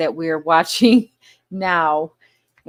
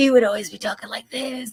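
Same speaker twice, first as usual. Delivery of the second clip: put-on whispering voice, higher-pitched and quieter; 4 semitones higher, 5 dB quieter than usual. Complaining about an actor she can't stand: Steven Seagal whisper impression. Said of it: "He always sounded like he was whispering".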